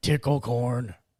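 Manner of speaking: yelled, called out. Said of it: "gets to the corner up here again and yells".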